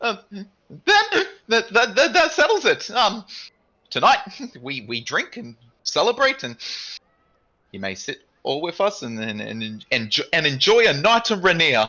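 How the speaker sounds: shrill, very high, very loud squeaky voice. Voicing a character inviting the group to drink and celebrate, squeaky voice. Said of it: "straightens up and squeaks as he talks".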